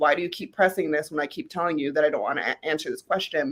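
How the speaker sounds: ordinary delivery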